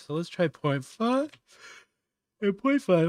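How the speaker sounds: talking through a yawn. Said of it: "I'm so sorry for yawning constantly".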